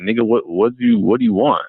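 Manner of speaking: accusing, confrontational, high, swooping tone. Retelling what she asked when she came over: imitating an accusatory tone. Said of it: "in a accusatory tone".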